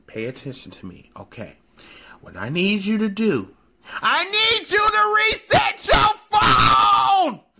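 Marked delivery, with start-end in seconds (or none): 2.2-7.3 very high, slow, drawn-out, rising angry shouting. Show host on the phone with a co-host who is not responding, yelling. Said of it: "I'm sorry for yelling that way on the phone".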